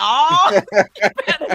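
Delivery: high, loud, laughing delivery.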